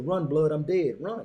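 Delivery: play-acted, perfectly composed, calm, unpanicked delivery. With a gun to his head, he retells telling his friend to run, retelling a calm warning. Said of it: "in the calmest manner, no panic".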